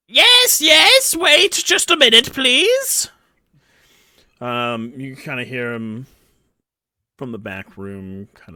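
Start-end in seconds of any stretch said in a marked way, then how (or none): 0.2-3.1 very high, shrill, loud gnome voice. A game master voices the shopkeeper answering from the back room: Zolob gnome voice. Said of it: "Good old dark gnome".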